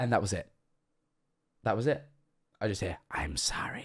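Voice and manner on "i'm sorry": eerie, hushed, raspy, creepy whisper. Recounting a voice suddenly heard while working: imitating a raspy, creepy voice. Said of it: "in the raspiest sort of, like, creepy voice".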